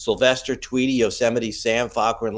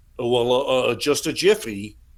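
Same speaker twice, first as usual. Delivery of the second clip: nasal, sinusy cartoon voice, spoken through the nose. Retelling knocking on a door at night, imitating the reply: Barney Rubble voice. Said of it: "that sinus sounds like Barney Rubble".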